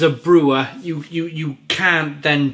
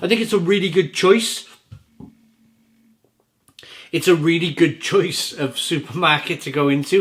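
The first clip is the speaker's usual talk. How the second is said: giggly, laughing between words; 2 semitones higher than usual. Praising a brewery's move into Marks and Spencer's, giggling while talking. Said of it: "Sorry for my giggling".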